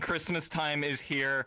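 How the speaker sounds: ordinary delivery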